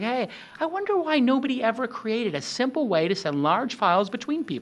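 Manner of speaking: curious, musing tone. Showing different voices for presenting a product: inquisitive voice. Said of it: "you can use an inquisitive voice".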